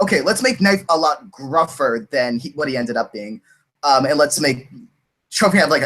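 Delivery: ordinary delivery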